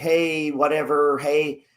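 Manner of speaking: vague, aimless, unfocused, tossed-off delivery. Showing how people talk when addressing nobody in particular: vague, unfocused delivery. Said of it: "You're saying it very vague".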